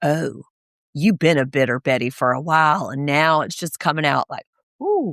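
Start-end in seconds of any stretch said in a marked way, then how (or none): 0.0-4.3 put-on cold, quiet, cutting tone, lower pitch. Retelling a cast member's put-down to another speaker: imitating a quiet, icy jab. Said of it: "the vitriol in her voice whenever she, like, did that chuckle and it got real quiet".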